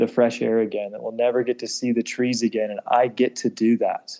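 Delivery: ordinary talk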